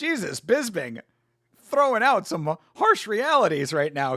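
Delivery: cracking, breaking voice. Reacting live to a commentator's harsh remarks about a fighter, voice cracking. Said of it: "Excuse me for that little voice crack".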